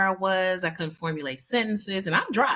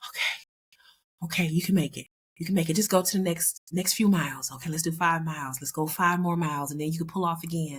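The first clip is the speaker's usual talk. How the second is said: put-on deep breathing while talking. Speaker recalling dizzy spells while driving and self-talk, retelling deep breathing while talking. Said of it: "And I'm breathing deeply".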